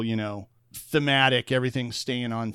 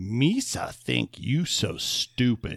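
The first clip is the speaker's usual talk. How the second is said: very slow, drawn-out character voice, every word stretched. Imagining a scene where a character speaks before the voice changes: Jar Jar Binks voice. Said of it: "to have him".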